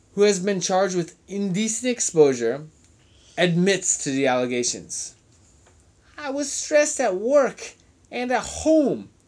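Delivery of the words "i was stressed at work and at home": rough, put-on Spanish accent, pitched up.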